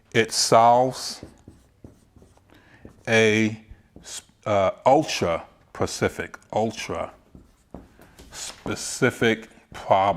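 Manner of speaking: unhurried, slow delivery. Explaining what a lead magnet must be to the audience, speaking slowly. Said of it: "I'm gonna say that slowly".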